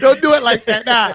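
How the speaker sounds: laughing.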